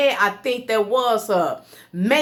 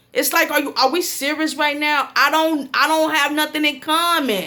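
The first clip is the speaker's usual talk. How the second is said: plain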